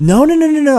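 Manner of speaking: loud, shocked, stunned screaming outburst. Retelling their shock at a movie twist: screaming a retold reaction. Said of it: "I'm screaming at these out my mic".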